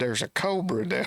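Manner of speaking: put-on frantic, alarmed, panicked yell. Retelling a golf partner running from a snake: imitating a panicked yell. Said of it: "And he was yelling".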